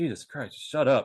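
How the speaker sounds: muttering under breath. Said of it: "under my breath".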